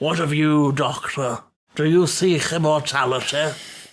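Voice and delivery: slow, measured, deliberate, drawn-out tomb-figure voice. Answering with a line from the figure in the tomb: imitating the figure in the tomb. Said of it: "That's actually a good impression".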